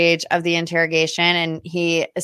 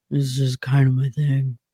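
put-on mumbling, lower pitch; 4 semitones lower than usual. Retelling how a man answered in an interrogation, retelling a mumble. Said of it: "he literally was mumbling".

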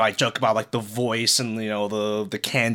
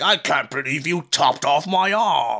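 put-on Cockney accent, slow and very drawn out; 5 semitones higher than usual. Describing how game characters speak after losing an arm, in a cockney accent. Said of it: "they'll like speak in a Cockney accent".

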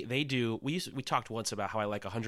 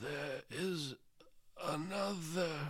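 put-on much quieter old man voice; 6 semitones higher, 6 dB quieter than usual. Reassuring the other speaker there will be another podcast, in a Dumbledore impression. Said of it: "It sounded like Dumbledore".

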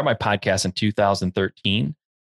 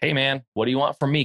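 mock flippant, dismissive voice, higher pitch; 4 semitones higher than usual. Retelling the realtor's response: imitating a flippant realtor. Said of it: "the realtor was very, like, flippant about it".

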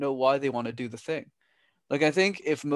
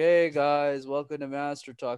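mock, put-on drunk-sounding voice. Retelling his first videos recorded in a basement: imitating himself sounding drunk.

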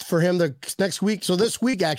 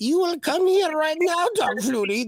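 put-on very high-pitched old master voice, pitched way up; 11 semitones higher than usual. Streamer jokingly uses his Jedi ways to call someone over: Yoda voice. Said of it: "That's my Yoda voice".

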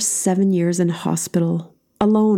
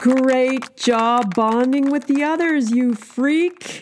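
piping up, higher pitch; 6 semitones higher than usual. Janet speaks after the others have only smiled warmly at the newcomer, piping up. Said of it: "Janet piped up".

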